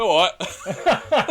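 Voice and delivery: put-on cyborg voice, London accent. Recalling a line from an audio drama: London Cyberman voice. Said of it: "one of the Cybermen went".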